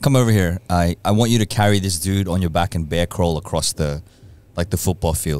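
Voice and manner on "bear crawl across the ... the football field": ordinary talk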